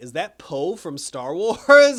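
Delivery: startled, loud, excited realization.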